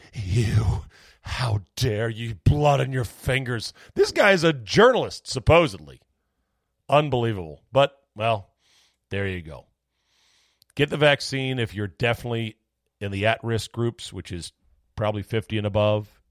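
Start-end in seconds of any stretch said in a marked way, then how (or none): 0.1-3.7 slow, drawn-out voice that cracks. Mocking a journalist who scolded people for spreading misinformation: mocking Chuck Todd's breaking voice. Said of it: "wagging your finger and your voice is breaking".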